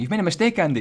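put-on high burst of panic. Retelling own thought while looking at the build: imitating own panic. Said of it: "I was just looking at it and panicking".

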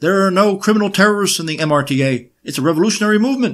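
screamed in a put-on Yiddish accent. Acting out a woman at her trial, imitating screaming in a Yiddish accent. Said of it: "in her Yiddish accent screaming in court".

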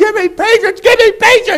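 high-pitched, loud mock screaming and hollering.

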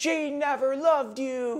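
put-on, very high-pitched, drawn-out yell. Retelling an argument on a beach: imitating Scott yelling. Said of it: "just starts yelling".

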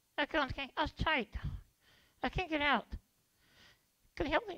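very high, soft, squeaky little puppet voice. Performing the escape artist character in a sketch: escape artist puppet voice. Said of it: "This is [name], the escape artist cards".

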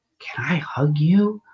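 very slow, soft whisper. Retelling what an elderly patient leaning in asked: imitating a whisper. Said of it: "she whispers".

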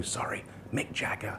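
hushed, breathy whisper. Speaker retells a BBC boss taking a call halfway through lunch, whispering an aside.

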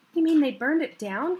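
loud, high, gasped-out voice. Rachel reacts to the uncle's news about William Ashby's house: gasped. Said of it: "Gasped Rachel".

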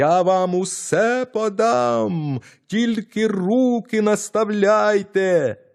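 very high, drawn-out yell at full lungs. Narrator reads the tiny boy shouting to the thieves: shouting as loud as possible. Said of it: "знову закричав, скільки було голосу".

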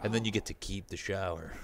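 mock creepy delivery in a joking tone. Finishing a story about hazing an underclassman: mock creepy delivery. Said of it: "so creepy the way you said that".

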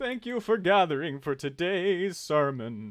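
put-on old-man carnival-barker voice, loud, high, slow. Greeting people gathered for a sermon, in a carnival barker old man voice. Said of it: "going for, like, a carnival barker old man".

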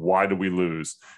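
menacing, intimidating, low and slow. Retelling a host's question to the players: imitating a menacing question. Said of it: "a very menacing, threatening kind of way".

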